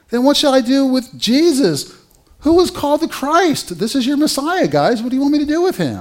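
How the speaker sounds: high, loud, exasperated pleading.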